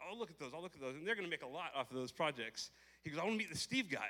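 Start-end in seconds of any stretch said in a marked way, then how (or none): 3.2-4.1 mock-excited, higher and louder. Recounting what a man said about the project: acting out him all excited. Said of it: "he's all excited about the Steve".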